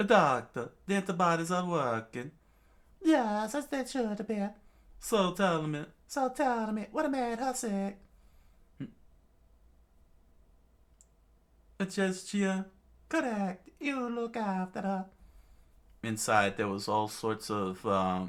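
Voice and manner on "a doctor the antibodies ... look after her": put-on Italian accent, higher pitch. Voicing characters talking with the doctor: put-on Italian accent. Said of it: "I could give him the Italian voice".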